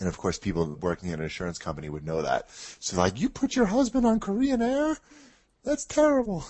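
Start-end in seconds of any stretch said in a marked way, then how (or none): 2.8-6.4 put-on Japanese woman's voice, very high-pitched. Retelling what his wife's coworkers told her: japanese woman voice. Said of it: "That was my Japanese woman voice".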